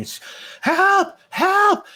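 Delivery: shouting. Game narrator voicing an unseen person the players hear; yelling for help. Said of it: "you hear someone yelling".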